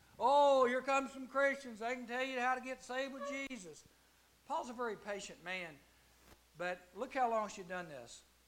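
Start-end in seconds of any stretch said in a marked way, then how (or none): 0.2-3.8 derisive, half-mocking, high-pitched mocking delivery. Retelling how a girl announced the Christians; imitating a mocking tone. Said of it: "she's saying it in a way that almost mocks them".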